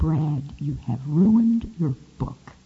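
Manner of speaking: slow, unhurried delivery. Quoting a woman who addressed him by name, retelling slow speech. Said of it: "she spoke slowly".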